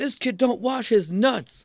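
shrill, very high, loud shrieking scream. Retelling a guy who mocked him in a Kroger, imitating a guy screaming. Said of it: "he's screaming".

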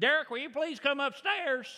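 put-on high-pitched Arkansas accent, called out.

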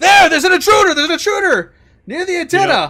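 shouting soldier voice. Game master voicing a soldier in a tabletop game, soldier shouting out. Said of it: "he shouts out".

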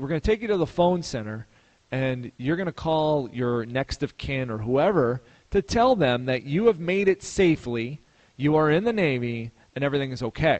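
ordinary talk

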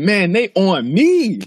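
play-acted very slow, high, stretched-out, drawn-out holler. Acting out a popular dad's boast to another speaker: imitating someone yelling. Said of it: "was he yelling it like that?".

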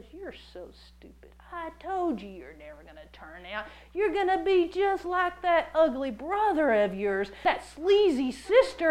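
mock ridiculing, accusing, taunting voice. Acting out the enemy's voice ridiculing someone caught in sin: ridiculing voice of the enemy. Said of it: "that same voice jumps on the other shoulder and goes".

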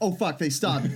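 ordinary delivery

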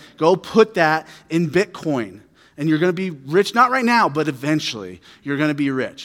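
ordinary talk, nothing marked

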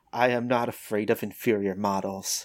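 very low, hushed voice. Narrating a fight, an opponent speaks only to you in a low quiet voice. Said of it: "He says in a lower voice that only you can hear".

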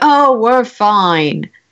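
utterly unconvincing, fake-fine, reassuring-sounding tone. Picturing an injured person telling others all is well: imitating an unconvincing tone. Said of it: "in the most inconvincing tone of voice".

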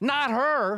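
shrill, very high, shrieking scream. Narrator reads the other stepsister objecting to the prince's choice; screaming. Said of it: "screamed the other stepsister".

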